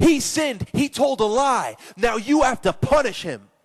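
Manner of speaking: acted-out, high, shrieking scream. Acting out the devil screaming up to god about a sinner. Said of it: "the devil screams up to God".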